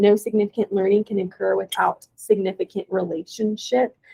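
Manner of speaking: normal talking voice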